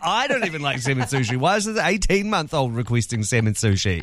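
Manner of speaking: ordinary talk, nothing marked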